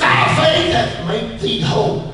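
emphatic, heavy stress on faith. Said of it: "Rewind it again".

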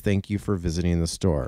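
usual speaking voice

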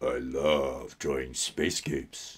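low voice, with love dragged out. Chatting while drawing, the speaker repeats a line in his Sexy Cave Troll voice. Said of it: "that's my Sexy Cave Troll voice".

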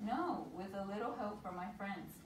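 ordinary delivery

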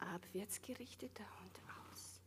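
soft, calm whispered voice.

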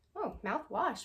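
soft voice breaking and cracking on the word. Reviewing products just bought, voice cracking. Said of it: "My voice just cracked".

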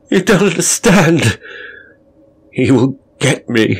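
high frightened moan. Reading a story, narrator voices Rutland after the orderly leaves, with a fearful moan. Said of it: "he moaned".

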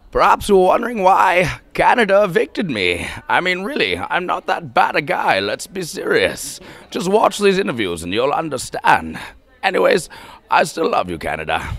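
loud booming, wide pitch swings. Asked by the interviewer for an accent, doing a Bane voice. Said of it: "one of my favorite accents would be, uh, Bane from the movie".

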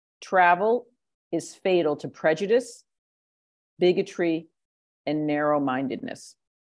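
slow, deliberate, each word carefully spaced out. Asked to repeat a Mark Twain quote, spoken slowly. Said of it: "can you say the Mark Twain quote slowly?".

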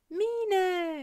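joyful high call, drawn-out "Mine". Ginny greets the friend arriving at the garden terrace, calling out happily. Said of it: "rief sie glücklich".

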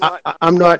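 ordinary delivery

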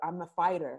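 ordinary delivery

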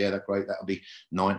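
normal talking voice

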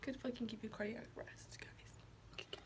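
quiet whisper. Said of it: "Sorry, I'm whispering".

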